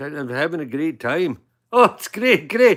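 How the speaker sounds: put-on Scottish accent. Putting on a voice for the camera to joke around: Scottish accent. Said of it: "in Scottish".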